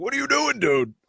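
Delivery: very high, exasperated, screaming yell. Imagining the coach screaming at the goalie who left the net. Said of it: "I can only imagine the coach like screaming at him".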